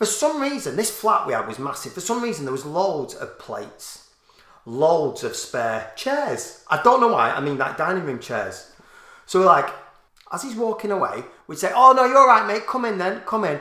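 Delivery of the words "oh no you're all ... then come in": high-pitched loud shouting. Retelling calling a drunk man back from the top window: retelling shouting down from a window. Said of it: "We're shouting down".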